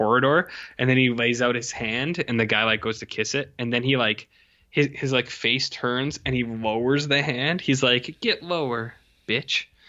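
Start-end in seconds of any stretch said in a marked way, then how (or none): 8.2-9.6 put-on haughty, sassy, cutting delivery. Retelling a scene where a character lowers his hand: imitating a sassy character. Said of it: "Man, that's sassy".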